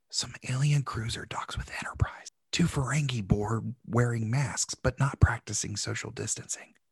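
soft whisper under the breath. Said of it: "I'll whisper the rest of this recap".

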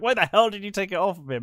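outraged, angry, furious, high-pitched voice. Retelling a movie scene where Nicholas questions the butler: imitating furious Nicholas. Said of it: "Nicholas is furious".

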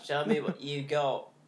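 British accent, attempted as Australian. Asked to try an Australian accent, attempting it but sounding British. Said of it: "It's British".

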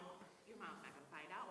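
ordinary delivery

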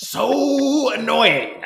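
very slow, loud villain voice, every syllable stretched. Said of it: "I still say that regularly in that tone of voice".

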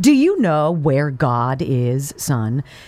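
severe, stern, very slow delivery. A narrator reads a preacher questioning a young boy, stern. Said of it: "asked him sternly".

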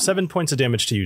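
normal talking voice

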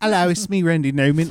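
put-on British accent. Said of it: "What if he has, like, a British accent?".

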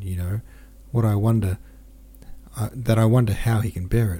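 ordinary delivery

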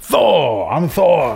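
loud, high, big, lifted declaiming voice. Trying out a Thor voice while joking about playing Thor: Thor impression. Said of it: "I'd be like".

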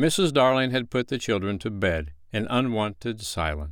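ordinary delivery

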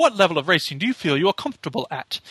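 put-on posh narrator voice. Describing a racing game's narrator guiding setup, imitating a posh accent. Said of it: "He's got this very posh accent".

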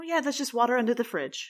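mock offhand, no-big-deal, matter-of-fact delivery. Laughing about something a woman said, the speaker imitates her matter-of-fact tone. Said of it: "she says it so matter-of-factly".

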